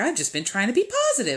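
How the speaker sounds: put-on, really girly, super high voice. Imitating how others talk about trying to be positive, really girly, super high voice. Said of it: "in like a really girly voice, ... it's like super high".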